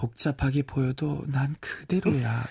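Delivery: sultry voice.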